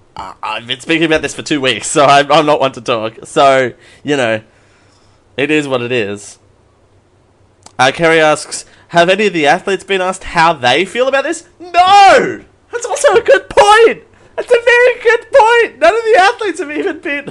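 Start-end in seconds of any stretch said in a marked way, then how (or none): 11.6-17.3 very high, louder voice with "no" drawn out. Reacting to a question just read out, in a high-pitched voice. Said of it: "my high voice now".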